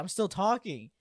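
put-on upset, protesting woman voice. Retelling a stage exchange, acting out a woman insisting she is still speaking, in an imitation of an upset woman. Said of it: "she got more upset".

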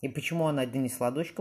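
plain reading voice

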